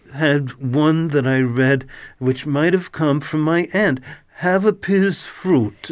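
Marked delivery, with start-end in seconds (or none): 4.4-5.9 put-on Yiddish-accented English, accent on "piz fruit". Quoting a saying that might have come from an aunt, in a yiddish accent. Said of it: "You say it perfectly with that Yiddish accent".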